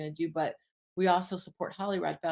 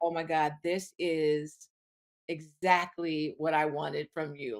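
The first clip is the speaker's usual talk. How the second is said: plain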